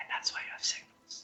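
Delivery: barely audible, whispered mumble under breath. A character who said nothing mumbles to himself: quiet mumble to himself. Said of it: "mumbles quietly to himself".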